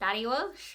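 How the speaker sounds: terrible, unconvincing put-on Irish accent. Naming characters from a book: terrible irish accent.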